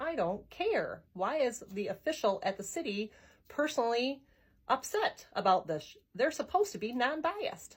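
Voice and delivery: ordinary talk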